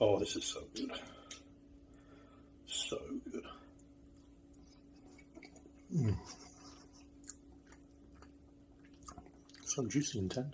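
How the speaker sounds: half-whispered, breathy murmur, talking through food. Tasting the finished dish, talking with mouth full. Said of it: "shouldn't be talking with my mouth full".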